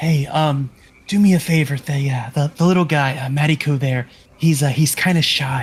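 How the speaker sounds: whispered voice. Whispering a favor to a couple of them, in character: whispering. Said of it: "just whisper to a couple of 'em".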